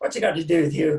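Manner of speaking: put-on Irish brogue. Retelling a stranger in the change room questioning him: Terry Corcoran's Irish accent. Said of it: "his Irish accent".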